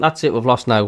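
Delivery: ordinary talk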